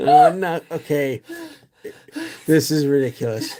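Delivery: talking through laughter. Reading out a card to another player, laughing while talking. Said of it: "Hard to talk when I'm laughing".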